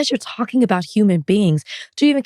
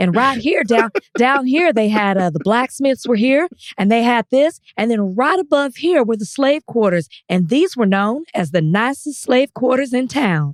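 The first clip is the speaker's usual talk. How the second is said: put-on accent of the American South; 3 semitones higher than usual. Quoting a woman's words to the listener, in a southern accent. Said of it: "In her southern accent".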